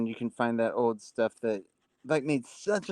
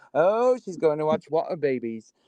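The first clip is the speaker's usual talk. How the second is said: mocking, teasing, put-on British accent; 3 semitones higher than usual. Retelling how others used to tease a girl about a show: mocking British accent. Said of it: "they would say it for some reason in a British accent".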